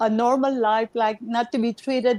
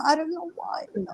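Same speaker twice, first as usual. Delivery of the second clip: crying while talking, tearful, higher and quieter; 6 semitones higher, 5 dB quieter than usual. Talking about getting emotional during the conversation, crying while talking. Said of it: "I'm crying now".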